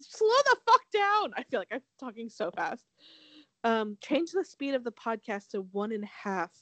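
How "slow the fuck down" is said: high, loud exasperated yell. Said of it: "everyone's like".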